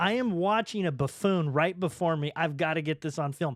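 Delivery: ordinary delivery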